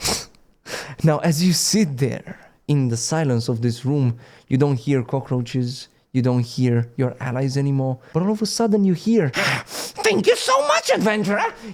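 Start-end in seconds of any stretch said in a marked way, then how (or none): 10.0-11.5 very high-pitched talking rat voice. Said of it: "The rat speaks to you".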